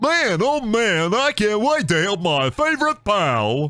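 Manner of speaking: goofy cartoon voice, high-pitched and very slow. Imagining how he will talk, in a goofy cartoon voice. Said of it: "Goofy cartoon voice".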